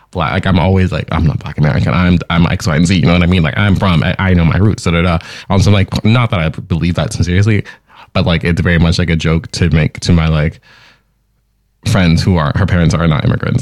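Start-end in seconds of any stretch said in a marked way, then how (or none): none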